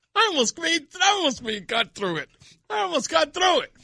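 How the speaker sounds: giggling through the words, voice pitched very high. Apologizing after breaking up mid-sentence about a caucus, laughing while talking. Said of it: "but I'm laughing".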